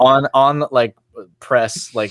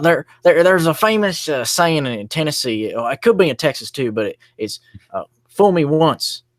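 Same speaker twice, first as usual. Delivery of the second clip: pitched-up, stumbling delivery, tripping over words; 5 semitones higher than usual. Retelling a famous flubbed saying: George W. Bush impression. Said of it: "he said".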